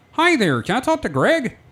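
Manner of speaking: very high frog puppet voice. Retelling phoning a place and asking for someone, in a Kermit the Frog voice. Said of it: "it's gonna sound like Kermit the Frog".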